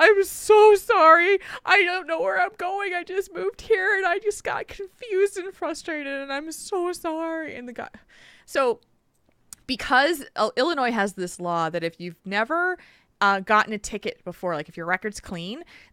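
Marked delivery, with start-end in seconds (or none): 0.0-7.5 very high-pitched, tearful crying voice. Retelling being pulled over by an officer, acting out a tearful apology. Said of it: "I started crying and I'm like".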